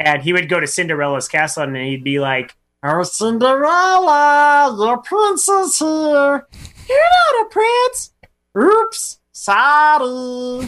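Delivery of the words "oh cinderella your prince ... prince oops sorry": very high, slow, swooping alien voice, "sorry" stretched out. Retelling a ride video of Stitch at Cinderella's castle: Stitch voice. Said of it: "imitation of that".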